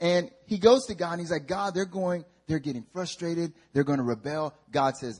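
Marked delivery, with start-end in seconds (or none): none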